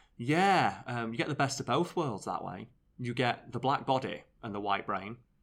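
ordinary talk, nothing marked

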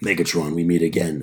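very deep, low, heroic robot leader voice. Joking about dubbing a line into the next Transformers movie, in an Optimus Prime voice. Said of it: "That was the most, like, realistic voice I've ever heard".

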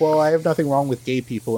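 ordinary talk, nothing marked

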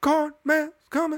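very high-pitched, eerie voice. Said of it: "this, like, really high-pitched voice".

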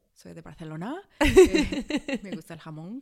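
very loud Barcelona Spanish accent with slight lisp. Asked to do a Spanish accent, showing someone from Barcelona: Barcelona Spanish accent with lisp. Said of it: "They like have a little lisp".

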